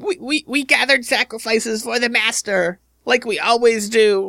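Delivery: panicked, terrified, very high creature squeal. Voicing a terrified kobold who confesses to gathering sacrifices: terrified kobold voice. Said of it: "he repeats that several times in terror".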